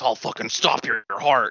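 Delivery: unearthly, possessed demon-like voice. Retelling a movie scene where a kid threatens a man, demon voice. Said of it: "the kid says in like a demon voice".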